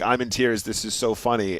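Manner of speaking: normal talking voice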